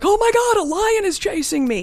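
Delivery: high, loud mock panic.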